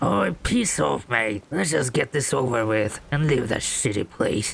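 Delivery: cross, angry, altered-sounding dismissive voice. [name] answers being asked to say hello to the viewers; angry [name] voice. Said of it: "why are you so angry? ... why your voice have been changed?".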